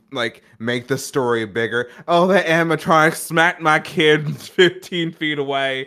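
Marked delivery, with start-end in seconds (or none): 2.0-5.8 put-on loud, high-pitched southern US accent. Speaker acting out a parent exaggerating a story, southern accent. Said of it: "I don't know why I went southern".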